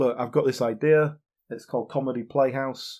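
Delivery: ordinary talk, nothing marked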